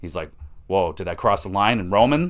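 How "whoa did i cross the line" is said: ordinary talk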